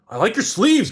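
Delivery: very high, squeaky put-on character voice. Attempting an impression the speaker admits is poor: Napoleon voice. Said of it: "I can't do the Napoleon voice. Hold on".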